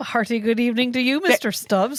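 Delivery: put-on Irish accent. Retelling what a man said to mister stubbs: irish accent impression. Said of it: "That's [name] who did that".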